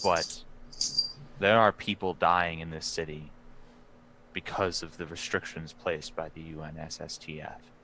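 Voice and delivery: hushed voice. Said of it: "he whispers and says".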